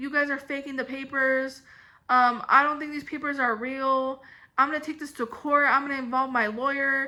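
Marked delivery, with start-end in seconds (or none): none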